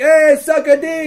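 very slow, high, drawn-out jeering yell. Retelling answering the Nilfgaard crew, retelling a yell of abuse. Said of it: "me and Callum are just yelling abuse at them".

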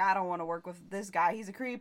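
ordinary talk

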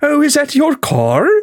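very high, baffled, confused Welsh accent. Demonstrating how to do a Welsh accent, confused-sounding Welsh accent. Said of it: "to do the Welsh accent, you just have to always sound confused".

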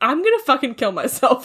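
ordinary talk, nothing marked

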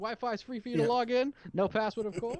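put-on New Zealand accent held on every word. Quote what he says when they walk in, in a Taika Waititi accent. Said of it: "his accent is just so good".

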